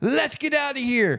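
put-on yelling. Retelling shoving a friend away while yelling at him, retelling a yell. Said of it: "I'm shoving Moose and yelling at him".

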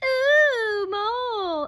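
very high, loud, squeaky cartoon-bird squeal, ooh stretched. Narrating a story, three chicks screaming at Mole, screaming in Tweety voice. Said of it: "in their Tweety voice".

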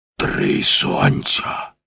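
croaked out, very low, rough and hoarse. Narrator reads a character's exclamation to his companions, hoarse croak. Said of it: "прохрипів Маккен".

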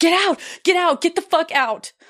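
very high-pitched, piercing, shrieked scream. Retelling a boyfriend sitting up in bed at night: imitating someone screaming.

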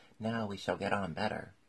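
ordinary delivery

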